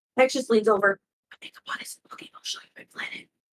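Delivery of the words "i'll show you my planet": whispering, much quieter. A character leans over and speaks to another as someone leaves, whisper. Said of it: "He just whispers to Liam".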